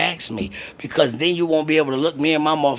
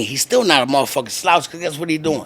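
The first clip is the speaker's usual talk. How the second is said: ordinary talk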